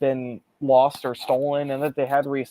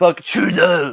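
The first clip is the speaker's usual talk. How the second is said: thick, loud, heavy put-on French accent; 3 semitones higher, 7 dB louder than usual. Joking about a politician, saying the insult again: heavy french accent. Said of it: "you have to say it with a heavy French accent".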